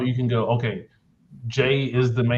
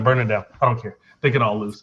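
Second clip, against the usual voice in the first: ordinary talk, nothing marked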